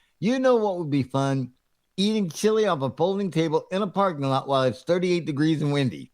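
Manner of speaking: ordinary talk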